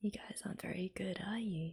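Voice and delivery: soft, very quiet, hushed whispered aside. Streamer reacting to a rehearsal scene, whispering.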